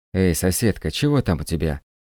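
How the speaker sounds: ordinary delivery, nothing marked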